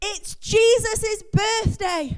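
put-on proud, boastful, high-pitched shout in a little-boy voice. Telling a joke, a young boy answers his dad: child shouting proudly. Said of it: "very proud of himself, shouts up".

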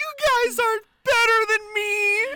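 tearful sobbing, very high crying voice. Recapping a scene, the speaker imitates Meredith crying at the group. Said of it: "Meredith is crying and going".

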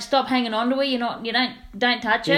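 ordinary delivery

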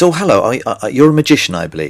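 pleasant, nice-sounding lady voice. Retelling a phone call from a lady booking a magician: imitating a nice-sounding lady caller. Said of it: "a very nice sounding lady on the other end".

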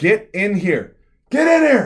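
shrill, booming, very loud high-pitched urgent yelling. Retelling a school earthquake when a teacher came to his classroom door, retelling a teacher's yell. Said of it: "he yells at me".

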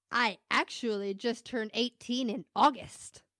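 put-on, very proud, boastful announcing tone. Retelling what a young job applicant said: imitating someone saying proudly. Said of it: "so proudly".

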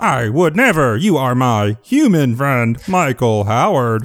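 put-on cartoon frog character voice. Reassuring the other speaker over the wires, answering in a frog voice. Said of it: "you picked a frog voice".

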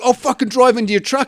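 put-on enraged, hot-headed voice. Retelling what a man said to him while getting angry, imitating an enraged man. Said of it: "he was just getting so enraged".

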